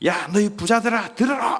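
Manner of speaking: resolute and unyielding. Speaker explaining a scripture passage, voicing its address to the rich in a firm, resolute tone. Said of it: "단호한 어조로 말씀을 하고 있는".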